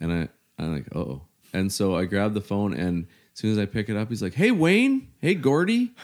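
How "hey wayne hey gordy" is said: very high, shrill, drawn-out screaming. Retelling a phone call you took just out of the shower, imitating someone screaming at you. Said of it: "he's just screaming at me".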